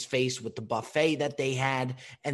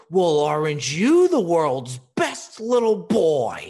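booming, sing-song festive voice with big swoops; 4 semitones higher, 10 dB louder than usual. Answering an eight-year-old who won't say his wish, keeping up the Santa voice. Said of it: "maintains the Santa voice and goes".

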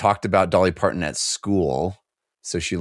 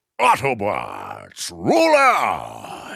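swooping pitch, stretched out long; 3 semitones higher than usual. Showing one of the few impressions that you do, use a Peter Cullen-esque voice. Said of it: "of the few impressions that I do".

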